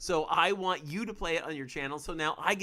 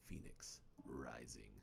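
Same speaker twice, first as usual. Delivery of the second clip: very quiet, breathy whisper, just above breath; 22 dB quieter than usual. Naming a title, saying it on a whim like the Emperor: the Emperor's voice. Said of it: "I don't know why I said that like the Emperor".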